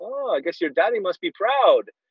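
put-on strong Puerto Rican accent. Retelling what his Puerto Rican priest friend said to him, strong Puerto Rican accent. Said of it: "he said with a very strong accent".

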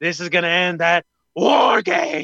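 slow, drawn-out hype announcer voice. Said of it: "it's just the way he says it".

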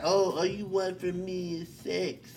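odd, goofy put-on voice, high and soft. The speaker quotes what they have heard people say, in a put-on voice. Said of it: "I don't know why I had that voice".

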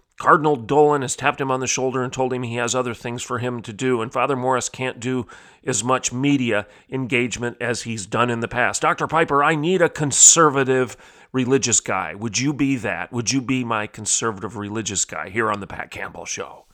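ordinary talk

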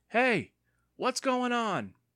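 very high, drawn-out call. Andy calls from down the sidewalk toward Evan and the boys, crying out. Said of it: "a voice cried out".

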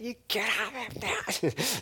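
put-on shrill, very high, very slow drawn-out yell. Retelling praying over a man in hospital: retelling own screaming. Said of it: "I was screaming".

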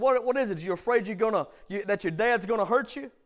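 put-on mocking, sarcastic smart-aleck voice. Retelling a girl's reply from the front seat: imitating a sarcastic smart aleck. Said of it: "being very sarcastic and having a smart aleck attitude".

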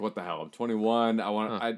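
ordinary talk, nothing marked

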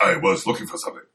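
very badly dubbed kung fu film voice. Recapping a movie scene line by line: worst edited kung fu movie voice. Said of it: "Worst edited kung fu movie voice".

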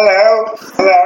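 put-on English accent, done on purpose. Retelling having to greet everyone they passed, in an English accent. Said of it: "greet them in an English accent".

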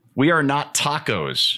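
ordinary talk

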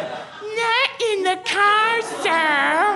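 childlike, bratty mocking voice, high and slow.

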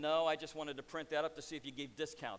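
ordinary talk, nothing marked

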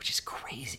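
soft, breathless whisper under the breath. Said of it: "You're not gonna whisper".

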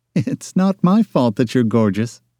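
light, playful, teasing jab. A woman answers a man who glowered at her: teasing. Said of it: "she teased".

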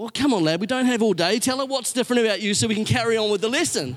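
put-on fast, irritated, annoyed prodding tone. Retelling the tutor turning from the board to hurry him: imitating an annoyed tutor. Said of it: "somewhat annoyed".

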